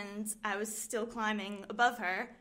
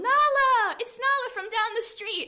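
very high, very loud, drawn-out yell; 13 semitones higher, 11 dB louder than usual. Telling a childhood story, acting out the older sister's shout: retelling a yell. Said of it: "she yelled".

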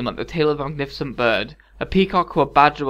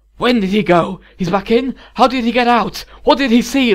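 raised, near-hissed, pressing delivery; 8 semitones higher, 6 dB louder than usual. Reading the Count questioning a young woman while dancing: demanding, almost hissing. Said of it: "almost hissing like her aunt".

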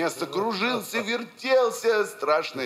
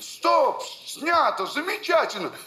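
play-acted, very high, loud shout; 12 semitones higher than usual. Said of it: "Павел Семенович кричит".

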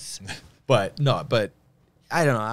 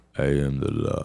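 very low-pitched, slurred delivery; 8 semitones lower than usual. Showing the one Stallone line that works, as Judge Dredd: Stallone as Judge Dredd impression. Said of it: "the only Stallone I can do half decent is".

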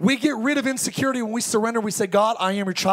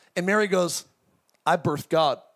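ordinary delivery

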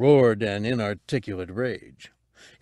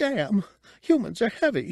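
very high, piercing, shrill, squeaky little yelp; 11 semitones higher than usual. Narrator voicing Cabe after a boy's heel crunches her toes: shrill squeak. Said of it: "The little Chadrafan gazed at him goggle-eyed, ... She squeaked shrilly at the sharp pain".

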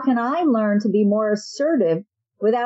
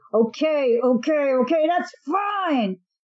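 slow, forced, through gritted, clenched teeth; 3 semitones higher than usual. Acting out someone holding back anger: through gritted teeth. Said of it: "saying through gritted teeth".

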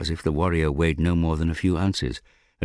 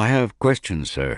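polite, courteous, higher pitch; 4 semitones higher than usual. Eskodas answers the captain, who has told him to leave the deck, polite. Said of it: "Eskodas told him politely".

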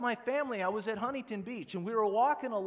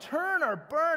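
high, loud, ranting, scolding scream; 7 semitones higher, 5 dB louder than usual. Describing a man yelling at people at an event, the speaker is imitating someone screaming. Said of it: "screaming at them".

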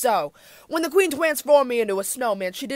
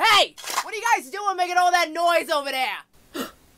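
put-on sudden New Jersey accent, pitched high; 6 semitones higher than usual. A character confronts the guys making noise, in a New Jersey accent. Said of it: "A New Jersey accent? Where did that come from?".

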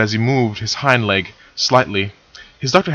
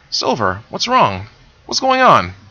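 nervous pony voice, higher pitch; 5 semitones higher than usual. Narrator reading Moltar after Silver says she is afraid: nervous Moltar.

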